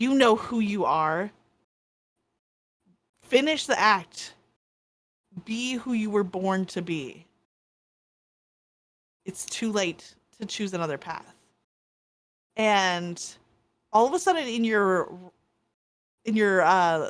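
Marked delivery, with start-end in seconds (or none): 0.0-11.3 growled, snarling dragon voice. Voicing a red dragon that turns on a player, snarling red dragon voice.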